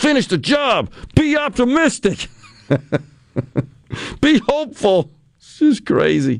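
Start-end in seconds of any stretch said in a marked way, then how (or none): 0.0-5.1 mock very high-pitched yelling. Retelling how the president yelled his lines with a scowl: imitating the president yelling.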